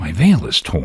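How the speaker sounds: ordinary delivery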